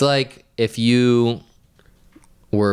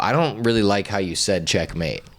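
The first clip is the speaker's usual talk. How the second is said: ordinary talk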